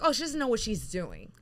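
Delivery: plain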